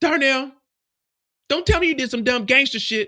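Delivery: woman's voice. Retelling what she said to Darnell, trying to get her voice, imitating Genesis' voice. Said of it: "Let me try to get Genesis' voice".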